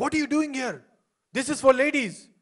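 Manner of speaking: indignant, high-pitched angry tone. Retelling a lady confronting a guy in the ladies, imitating an angry woman. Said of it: "she's so angry with this guy".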